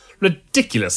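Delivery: huffy single word, puffed out. Reading a story, the doctor answers the monk; huffing. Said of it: "huffed the doctor".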